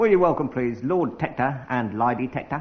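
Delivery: put-on Cockney accent. Host introducing guests to listeners, in a cockney accent. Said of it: "in a Cockney accent".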